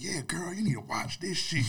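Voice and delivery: emphatic, high insistent tone.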